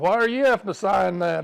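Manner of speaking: imitated loud child voice. Retelling a ten-year-old asking Dad why he must sign; loud ten-year-old voice. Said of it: "in a loud ten-year-old voice".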